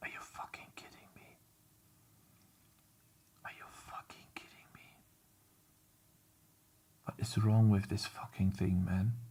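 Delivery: irritated, exasperated, breathy whisper. Fighting with transparency that stopped working in graphics: annoyed. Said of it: "I'm so annoyed by this".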